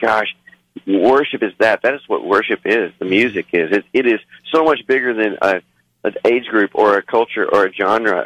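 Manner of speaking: ordinary talk, nothing marked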